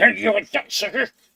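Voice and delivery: very high, very loud, shrill yell. Comparing porcupines to hedgehogs, voicing a porcupine: loud porcupine shout. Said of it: "that was really loud".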